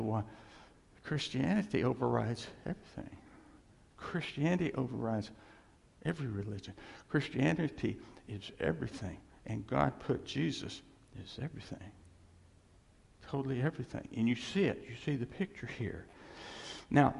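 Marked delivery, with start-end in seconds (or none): none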